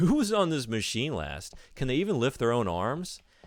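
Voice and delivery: mocking taunt through laughter, loud and high-pitched. Retelling what a man at the gym said after them, retelling a loud laughing voice. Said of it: "in a very loud voice, like laughed".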